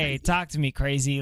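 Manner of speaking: plain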